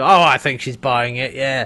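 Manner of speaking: put-on Australian accent. Retelling a character's line from the episode: australian accent. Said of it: "in a much more Australian accent".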